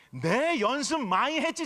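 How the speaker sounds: Gyeongsang Korean dialect. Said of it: "자체가 사투리 아닙니까?".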